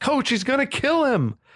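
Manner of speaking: shrill, very high-pitched, alarmed yell. Retelling a moment, speaker acts out Alex yelling to the coach, retelling Alex's yell. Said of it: "Alex is like yelling the obvious".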